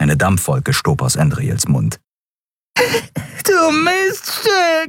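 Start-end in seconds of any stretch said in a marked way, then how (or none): 3.4-4.9 yowling, howling, very high-pitched. After Andriel breaks his nose, a man holding his nose shouts at her, howling. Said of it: "jaulte er und hielt sich die Nase".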